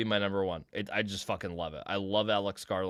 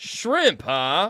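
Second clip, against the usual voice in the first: very loud, very high, charming belted delivery; 10 semitones higher, 9 dB louder than usual. Retelling meeting a celebrity at a party: imitating Sam Rockwell. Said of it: "And he goes".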